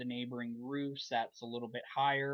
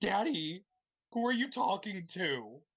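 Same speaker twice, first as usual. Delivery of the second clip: high-pitched talking pet dog voice; 7 semitones higher, 3 dB louder than usual. Speaker voices his dog whining at the door: voicing his dog. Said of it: "I just used her voice".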